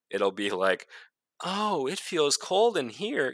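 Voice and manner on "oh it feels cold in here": high, cute, cuddly cartoon teddy bear voice. Describing a teddy bear gadget that reports temperature changes, in a Care Bear voice. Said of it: "in like a Care Bear voice".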